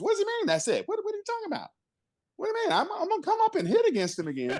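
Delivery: very high voice with swooping, swinging pitch. Act out Willie reacting to what the pitcher said to him, in Willie's high voice. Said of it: "Now this is Willie with that high voice".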